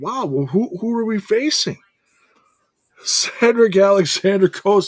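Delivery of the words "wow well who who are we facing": very high, eager, excited voice. Retelling a wrestler asking about the match: imitating Leon Slater, all excited. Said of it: "Leon's all excited".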